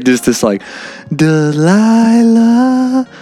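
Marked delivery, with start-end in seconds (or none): 1.1-3.0 put-on monotone radio host voice. Showing how an exhausted voice sounds: Delilah radio voice. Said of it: "my voice sounds a lot like Delilah".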